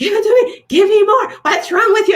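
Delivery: put-on spin-class instructor yelling, very high, shrill. Retelling a spin class where the instructor yelled at the speaker: imitating a yelling instructor. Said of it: "this instructor is yelling at me like".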